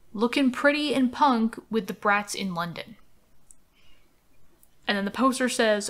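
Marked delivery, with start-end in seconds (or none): none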